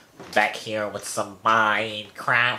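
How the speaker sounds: put-on nasal, pinched-nose voice. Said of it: "I sounded like I have my finger over my nose".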